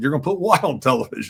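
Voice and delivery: ordinary talk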